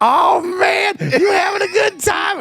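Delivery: put-on raspy drunk woman's shout, very high, drawn out. Retelling what a wasted woman said to him, imitating a raspy voice. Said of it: "She's got that raspy voice".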